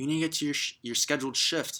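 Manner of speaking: acted-out mild, scolding, demanding half-shout. Retelling a boss's angry phone call about a missed shift, imitating someone screaming. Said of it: "screaming at me".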